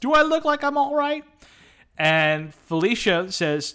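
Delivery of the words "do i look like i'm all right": mock tearful shout, very high pitch. A crying gas station attendant asked if she's okay replies, [name]'s mock-tearful shout. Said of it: "fighting through tears, shouts".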